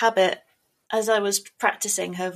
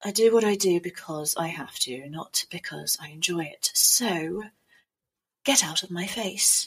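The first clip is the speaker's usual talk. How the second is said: deep, unhurried character voice; 2 semitones lower than usual. Performing the assassin character Mercy: low voice of Mercy. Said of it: "she had quite a low sort of".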